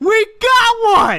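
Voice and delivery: yelling with excitement. Opening card packs, the speakers finally hit a good one: excited yelling. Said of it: "sorry for yelling".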